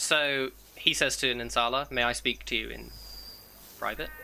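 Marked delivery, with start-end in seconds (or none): 1.9-4.1 quiet, hushed, low stage whisper meant to carry. Voicing a character addressing another in front of others: hushed tone. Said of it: "He kind of says it in a hushed tone".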